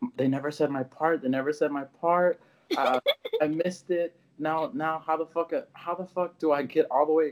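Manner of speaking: sobbing, high, crying and distressed. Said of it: "she's crying, she's crying, she's like".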